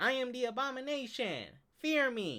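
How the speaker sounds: loud, slow, high, drawn-out, squeaky-wimpy villain voice. Mocking a villain walking down the street: wimpy Abomination voice. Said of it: "when you talking like that".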